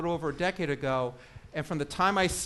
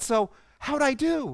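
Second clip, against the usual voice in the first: mock bright, cheery voice with pitched-up rising tone; 8 semitones higher, 5 dB louder than usual. Retelling a coaching session where she asks how she did, imitating Tara's bright, cheery voice. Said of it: "in this bright, cheery voice".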